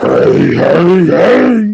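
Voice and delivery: belted high and loud cartoon voice. Answering a remark about a cartoon show: Fat Albert voice. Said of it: "Fat Albert cartoon show".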